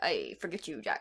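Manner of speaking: put-on very quiet, tipsy, drunk pirate voice. Describing a pirate crew to the other speaker, in a put-on drunk pirate voice. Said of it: "That's my pirate voice".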